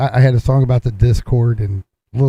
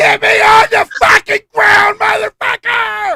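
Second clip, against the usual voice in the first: put-on panicked yell, higher pitched; 4 dB louder than usual. Doing an impression of Roxy in a hot air balloon: imitating Roxy yelling in panic. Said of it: "here's my impression, Roxy".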